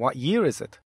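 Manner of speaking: normal talking voice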